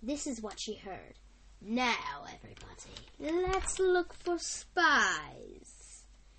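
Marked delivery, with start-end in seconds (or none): 1.6-6.0 very slow, eerie, creepy, menacing voice. A boss addresses his henchmen in a meeting room, in a creepy voice. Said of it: "Monty Moray said in a creepy voice".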